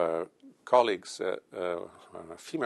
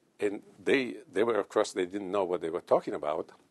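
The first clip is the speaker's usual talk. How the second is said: ordinary delivery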